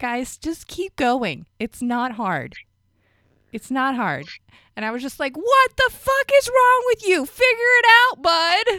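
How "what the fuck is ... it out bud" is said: very high, shrill, very loud screaming. Retelling yelling at a driver who slammed the brakes: retelling own screaming. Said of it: "Just screaming at him like".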